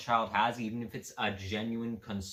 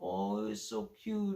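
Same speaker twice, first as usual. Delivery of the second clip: put-on baby talk voice; 9 semitones higher, 5 dB quieter than usual. Mocking how people talk to children, put-on baby voice. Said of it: "talk to them in that baby voice. Like the whole".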